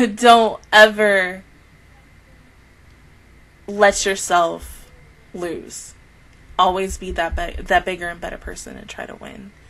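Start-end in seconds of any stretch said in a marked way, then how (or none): 0.1-5.9 slow, choked-up, holding back tears. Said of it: "I'm gonna cry".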